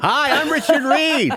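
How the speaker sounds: fake American accent, very high and slow. Redoing own audition line from memory: put-on American accent. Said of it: "he had to do an American accent".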